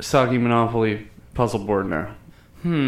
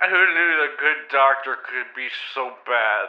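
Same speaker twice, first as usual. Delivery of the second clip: put-on menacing killer voice. Joking about a doctor, do your Buffalo Bill voice. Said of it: "stop doing your Buffalo Bill voice".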